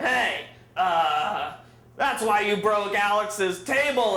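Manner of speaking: put-on slow, slurred, very drunk voice. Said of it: "in the most intoxicated way ever".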